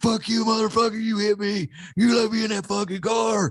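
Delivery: mock piercing, very high, shrill screaming outburst. Retelling a confrontation with a man on a bike: imitating a man screaming. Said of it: "some homeless guy screaming at me".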